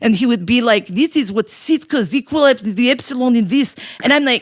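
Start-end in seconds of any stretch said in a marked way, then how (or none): 0.9-3.8 put-on thick Russian accent. Recalling a young man's dissertation, imitating Piotr's thick Russian accent. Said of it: "he had this thick Russian accent".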